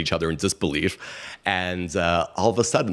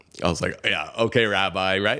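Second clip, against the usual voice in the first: ordinary talk, nothing marked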